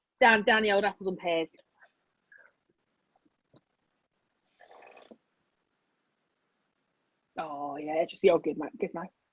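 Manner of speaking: put-on East London Cockney accent, patter style. Joking after another speaker praises a Cockney accent: put-on Cockney accent. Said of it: "I love the Cockney accent".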